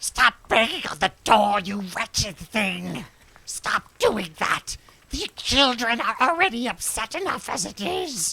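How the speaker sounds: sharp, cutting, gap-toothed voice of a haggard woman. Voicing a nurse who scolds the visitors banging on the door: cutting voice of a haggard woman. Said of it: "the cutting voice of a haggard woman missing a tooth".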